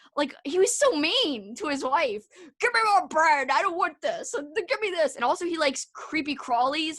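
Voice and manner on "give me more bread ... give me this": bossy, demanding, country-sounding giant voice. Recounting a giant from a story who sounded all country. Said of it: "the giant sounded all country".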